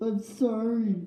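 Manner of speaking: sobbing. Offender asked if he feels any remorse, answering while sobbing.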